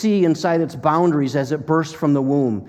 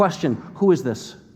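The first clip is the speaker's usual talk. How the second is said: usual speaking voice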